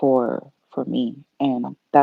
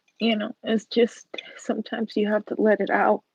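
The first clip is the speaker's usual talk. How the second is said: tearful, pitched-up crying through the words; 7 semitones higher than usual. Apologizing for crying while talking about someone they love, crying. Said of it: "I'm sorry that I'm crying".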